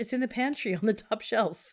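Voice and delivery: mild, distant calling-out voice. Retelling a conversation in the kitchen: retelling a yell.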